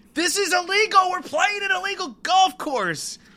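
very high, loud, frustrated shrieking scream. Retelling how a golfer reacted to a tough hole: imitating someone screaming. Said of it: "they just screamed".

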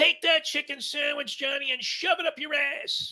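very loud, very high-pitched scream. Retelling what a guy at the bar screamed at the TV: imitating someone screaming. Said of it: "starts screaming".

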